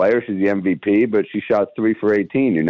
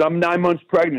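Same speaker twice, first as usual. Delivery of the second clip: mock mad woman's voice, high and angry; 9 semitones higher than usual. Retelling an argument while leaving an arena: imitating an angry woman. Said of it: "She's getting mad".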